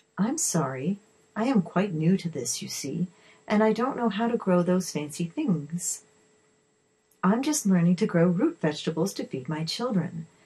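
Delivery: ordinary delivery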